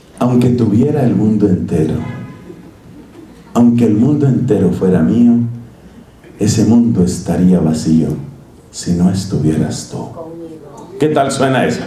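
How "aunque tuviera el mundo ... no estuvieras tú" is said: very low, deep romantic voice. Showing the audience how to speak to a loved one when romantic, deep romantic voice. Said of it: "poner así una voz profunda".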